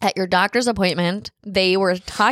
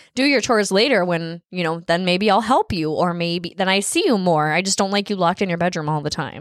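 ordinary talk

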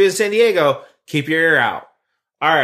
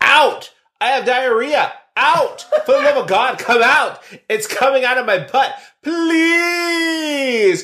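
high, drawn-out mock screaming; 8 semitones higher than usual. Reading a missed-connection post aloud, quoting a person pounding on a door: screaming. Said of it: "pounded on the door screaming".

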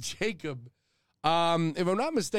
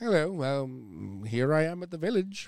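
put-on pig voice with London accent. Imitating the game's voice-acted pig from London: put-on London pig voice. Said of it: "pig from London".

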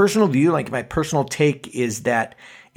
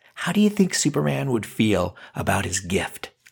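dark, sinister, menacing, taunting voice; 3 semitones lower, 4 dB quieter than usual. Narrating a made-up Superman story to listeners: sinister voice. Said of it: "I like how sinister my voice went there".

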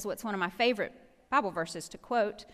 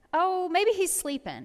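very high, mocking, sarcastic jeer; 9 semitones higher, 4 dB louder than usual. Retelling a prophet taunting rival prophets: imitating sarcastic taunting. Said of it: "kind of sarcastic with them".

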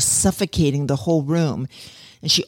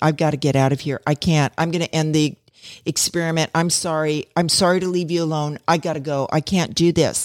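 put-on crying, tearful voice. Retelling a woman's meltdown during an experiment, imitating someone crying. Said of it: "she starts crying and saying".

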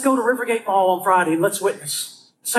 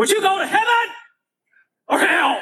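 put-on raised voice, higher; 10 semitones higher than usual. Retelling how he questioned four teenagers at a mall: imitating raising his voice. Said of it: "I lifted my voice just like that".

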